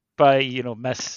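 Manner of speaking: ordinary talk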